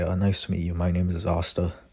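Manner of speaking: ordinary delivery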